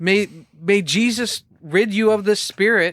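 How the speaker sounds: mock high-pitched shout. Retelling how the kid wakes him throwing water: imitating someone shouting.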